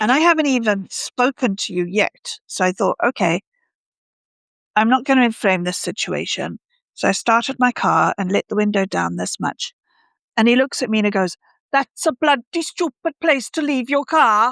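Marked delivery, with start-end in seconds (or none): 11.7-14.5 put-on pitched-up Welsh accent with simmering low-key rage. Speaker retells what a man said to them through their car window, imitating angry Welsh accent. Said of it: "accents convey low key rage quite as well as the Welsh".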